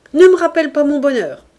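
haggard, furious, very loud high cry. Reading a man's outburst at the woman pleading with him: cried out. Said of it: "cria Jos".

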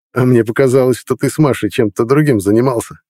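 snide, sarcastic, teasing and needling tone. Cutting in as the narrator starts to explain, a man teases him snidely. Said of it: "съехидничал [name]".

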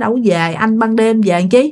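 usual speaking voice

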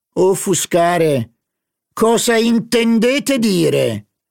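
drawn-out shrill yell, very high and slow. A man retorts to another guest's comment on the performance, shouting. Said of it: "urlò il signor Verdurin".

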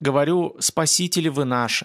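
ordinary delivery, nothing marked

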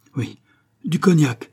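exclaiming. Stackhurst, arriving behind his collapsed subordinate, speaks up, exclaiming. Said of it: "s'écria-t-il".

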